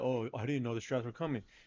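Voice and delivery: scornful, derisive, dismissive tone. Mocking the boss making an excuse after being called out: imitating the boss's excuse. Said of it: "you gonna sit there and be like".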